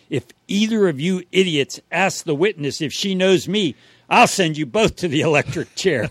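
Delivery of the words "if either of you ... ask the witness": ordinary delivery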